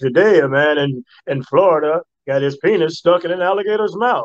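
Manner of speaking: TV news-anchor voice, reporting tone. Showing how he first delivered his news reports, in a newscaster voice. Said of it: "I would do it as a newscaster voice".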